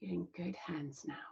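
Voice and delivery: put-on very quiet, gentle, hushed Scottish accent. Retelling a man comforting them as a hungry child, the speaker uses a soft Scottish accent. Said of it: "he said in his soft Scottish accent".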